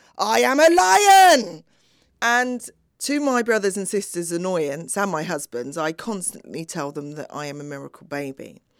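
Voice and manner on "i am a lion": very high, very loud, slow top-of-lungs shout. Retelling how the father shouted in the room: imitating a shout at top of voice. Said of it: "shout in the room at the top of his voice".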